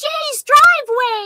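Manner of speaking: put-on very high, loud, squeaky little-kid voice. Retelling a kid's answer to a coach's question, high squeaky kid voice. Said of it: "in a high little kid squeaky voice".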